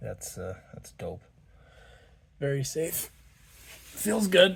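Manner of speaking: winded, breathless voice. Reviewing a kit while it's too hot, sounding winded. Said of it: "Sorry if I sound winded".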